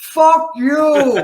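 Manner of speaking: furious, very loud, high screamed shout. Retelling screaming back at Sammy from the home neighborhood, retelling a scream. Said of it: "I'm screaming at fuck you".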